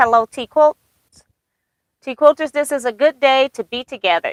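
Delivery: normal talking voice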